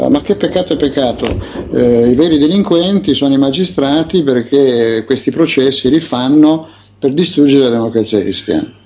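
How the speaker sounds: ordinary talk, nothing marked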